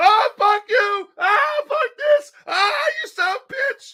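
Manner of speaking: shrill, high, all-out top-of-the-lungs scream. Retelling someone standing in a food fight: imitating someone screaming at the top of his lungs. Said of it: "Just screaming at the top of his lungs".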